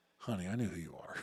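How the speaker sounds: put-on very sweet voice. Retelling how the chief's wife answered his phone call, imitating the sweetest voice. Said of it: "answers the phone with the sweetest voice".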